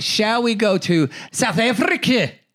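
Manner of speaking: fake South African accent, sounding Scottish. Performer tries an accent his partner says he can't do: bad South African accent. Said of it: "that is not a South African accent".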